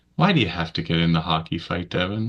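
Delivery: put-on relaxed, chill, laid-back tone. Retelling the mother asking about a hockey fight: imitating mother's chill tone. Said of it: "she was always very chill".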